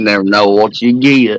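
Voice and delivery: put-on slow Southern voice. Answering a request to do an impression: Forrest Gump voice. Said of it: "Do an impression of Forrest Gump for me".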